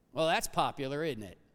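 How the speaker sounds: heavy, dry, knowing sarcasm. A speaker remarks to the audience with sarcasm. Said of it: "Y'all get the sarcasm there".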